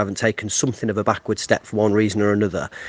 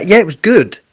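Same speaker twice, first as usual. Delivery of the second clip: very high-pitched, loud, astonished surprise; 10 semitones higher, 9 dB louder than usual. Answering a question about a dramatic late winner: surprised tone. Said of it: "the surprise in my voice is, um, is deliberate".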